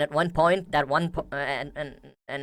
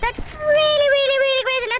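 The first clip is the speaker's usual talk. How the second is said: very high, fast, sped-up squeaky cartoon voice; 8 dB louder than usual. Showing what a sped-up voice sounds like, in a sped-up Mickey Mouse voice. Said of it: "a speed up Mickey Mouse voice".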